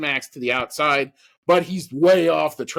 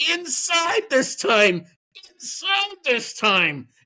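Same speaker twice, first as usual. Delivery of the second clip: mock high, drawn-out screaming; 10 semitones higher than usual. Retelling screaming at a driver going into turn one: imitating own screaming. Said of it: "I'm screaming at him".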